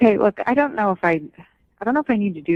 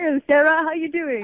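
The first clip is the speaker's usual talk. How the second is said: teasing, pitched-up, mocking put-on British accent; 7 semitones higher than usual. Repeating a caller's greeting back to mock him: mocking a caller's british accent. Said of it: "are you listening to that?".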